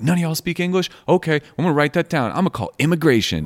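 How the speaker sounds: mock angry yelling. Retelling a lady yelling at the people in a taco truck: imitating someone yelling. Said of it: "she starts yelling at them and being like".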